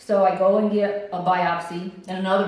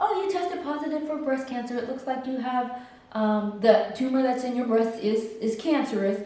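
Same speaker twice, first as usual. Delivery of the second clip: mock cheery, breezy, bright, chipper, pitched-up voice; 5 semitones higher than usual. Retelling a doctor giving a cancer diagnosis: imitating the doctor's chipper voice. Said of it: "she sounded so chipper".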